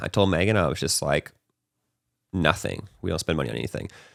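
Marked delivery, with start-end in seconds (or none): none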